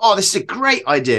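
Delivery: excited burst. Retelling own past thoughts about an adventure idea: imitating own past excitement. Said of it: "I'd get really excited, like".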